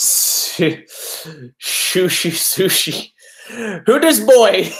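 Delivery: laughing through the words.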